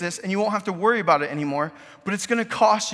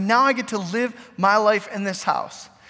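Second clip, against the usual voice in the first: ordinary talk, nothing marked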